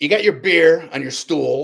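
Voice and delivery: gruff, rough voice. Retelling a man giving the speaker a tip, in a gruff voice. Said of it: "he had this gruff voice".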